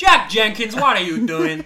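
very high, loud, awful put-on American accent. Asked to say a name in the most American accent, a bad American accent. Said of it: "that was awful".

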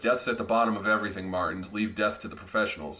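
ordinary delivery

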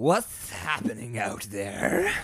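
overly cartoony voice that cracks. Telling a story, voicing someone over a train intercom in a Grinch-like cartoony voice. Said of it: "Sounds like the Grinch".

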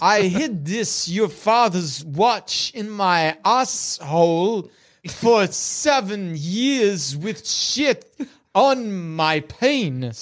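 very slow, deliberate, drawn-out drawl on every word. Trying a Christopher Walken impression for the others. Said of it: "you're Christopher Walken".

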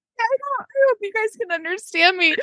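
talking through laughter. Speaker recalls a childhood memory with others, laughing while talking. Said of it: "I'm laughing so hard".

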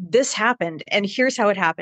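ordinary talk

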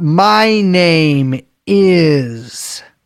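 very slow speech with drawn-out words.

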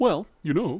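sincere, genuine tone, pitched very high. Imitating how a killer talks in interviews: imitating Ed Kemper's genuine manner. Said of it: "Just very genuine and like".

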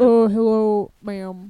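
voice dropped an octave. Trying out a put-on voice for a greeting, dropped an octave low. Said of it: "dropping your voice an octave low".

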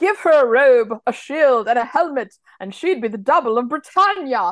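bad, terrible put-on British accent. Redoing a line reading for the others to make fun of, in a bad British accent. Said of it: "I know that my accent there was terrible".

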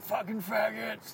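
hateful, high, slow, loud mock yell.

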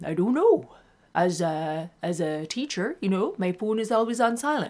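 put-on little Canadian accent. Quoting Joanne, a teacher, imitating Joanne's Canadian accent. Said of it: "just with her little Canadian accent".

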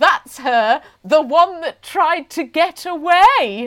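loud, high shout, slow and drawn out long. Retelling a woman shouting in front of the queue: imitating someone shouting. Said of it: "This woman shouted".

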